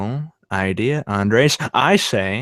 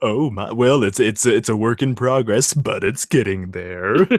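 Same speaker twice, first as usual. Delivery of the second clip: radio-announcer style voice, modest tone. Answering back as [name] in an impression of himself. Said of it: "[name] talking to [name]".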